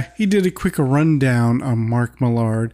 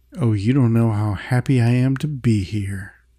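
put-on sarcasm, lower pitch; 3 semitones lower than usual. Retelling a scene where Mike answers the door to Millard: retelling Mike's sarcastic line. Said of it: "Mike sarcastically says".

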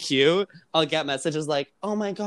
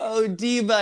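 imitated yelling, called out high and light; 6 semitones higher than usual. Retelling how the other speaker acted while recording: imitating someone yelling.

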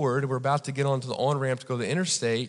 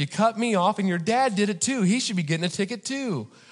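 play-acted, high-pitched angry yelling, dressing-down tone; 7 semitones higher than usual. Retelling a traffic stop, imitating an officer yelling at him. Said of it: "And he's yelling at me".

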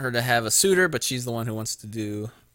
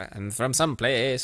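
put-on Irish accent. Mimicking what a woman did, the speaker slips into a put-on Irish accent. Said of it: "That was more of an Irish accent".

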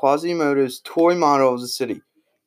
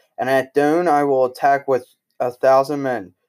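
ordinary delivery, nothing marked

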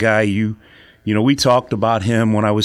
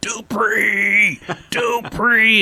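mock very high, drawn-out, stretched-out scream; 12 semitones higher than usual. Recounting a man on the press box roof yelling at a kid, retelling someone screaming. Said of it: "he's screaming".

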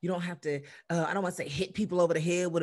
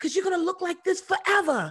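bad, very high-pitched New Zealand accent; 12 semitones higher, 6 dB louder than usual. Quoting her agent, who is from New Zealand, in a horrible New Zealand accent. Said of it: "That was a horrible New Zealand accent".

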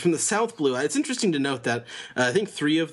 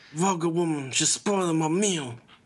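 affected, put-on mafia don gangster voice; 3 semitones higher than usual. Doing the dubbed Capone Bege voice when asked: Capone Bege mafioso voice. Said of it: "it's still very mafioso-y".

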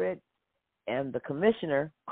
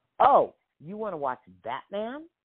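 play-acted affronted, indignant, offended tone. Retelling the father's reply to the children: imitating the father sounding offended. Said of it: "he said it like he was offended".

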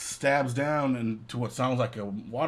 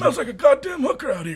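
put-on grumpy voice, higher and louder; 14 semitones higher, 8 dB louder than usual. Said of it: "That's exactly how he talks".

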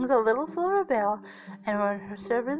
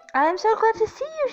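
very high, loud, squeaky little mouse voice; 11 semitones higher, 6 dB louder than usual. Narrator reading the little mouse's words to Vinko, squeaking. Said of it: "she squeaked".

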